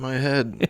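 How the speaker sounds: mock casual, offhand tone. Retelling a movie character's reaction to a head wound: imitating a nonchalant reaction. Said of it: "real nonchalantly".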